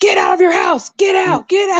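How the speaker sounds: mock loud yell, very high-pitched. Retelling what Gavin Newsom now tells people: imitating Gavin Newsom yelling. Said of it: "I felt like he was yelling at me".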